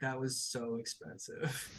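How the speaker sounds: muttered, breathy whisper under the breath. Game master voicing a character reacting to a smashed desk, muttering. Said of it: "he just mutters he's like".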